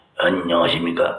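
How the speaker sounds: put-on hoarse voice. Telling everyone how the hoarse deacon greets people, imitating Deacon Lee's hoarse voice. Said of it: "목이 다 쉬었어요".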